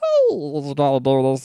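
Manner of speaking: swooping cartoon character voice. Showing how they switch into a character, Meatwad voice. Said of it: "to go into meat wad, I go".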